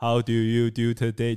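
low synthetic robot voice. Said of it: "他把妹的时候是用那个声音讲话".

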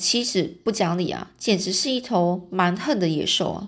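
plain reading voice

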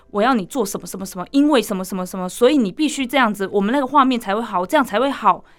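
usual speaking voice

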